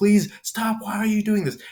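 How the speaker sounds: play-acted, very high shrieking, pleading tone. Retelling a scene where a woman begs a man honking a horn, acting out screaming, begging. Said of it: "as she's screaming, begging him to stop".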